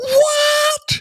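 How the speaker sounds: play-acted very high, stretched, drawn-out shriek. Retelling a man's reaction at the Chick-fil-A counter, imitating a scream. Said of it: "he just screams".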